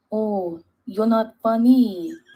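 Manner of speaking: put-on loud, heavy French accent, laid on thick. Quoting a bullying player from game nights: imitating a thick French accent. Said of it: "this man with this thick French accent say".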